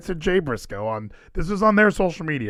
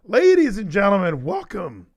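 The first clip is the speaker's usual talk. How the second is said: cracking voice breaking, pitching up mid-line; 6 semitones higher than usual. Opening a show while still sick: voice cracking. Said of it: "my voice cracked".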